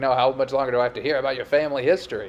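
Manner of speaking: put-on cranky, cantankerous old man voice, griping. Martin, irritated by the exercise, answers Daphne as she stretches his leg, in a John Mahoney impression. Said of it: "That's the John Mahoney I'm working on".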